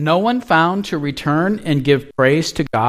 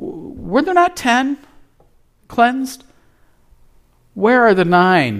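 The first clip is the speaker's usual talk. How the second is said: mock sorrowful, disappointed, grieving, pitched up; 7 semitones higher than usual. Speaker quoting Jesus' words to listeners, acting out sad, grieving words. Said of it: "Are you hearing the sadness and the grief in that?".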